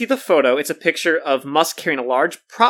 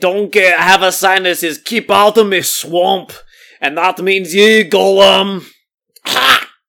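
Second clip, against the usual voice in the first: put-on ogre voice, higher and louder; 3 semitones higher, 6 dB louder than usual. Answering a co-host's swamp joke: Shrek voice. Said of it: "Gollum and Shrek would be beefing".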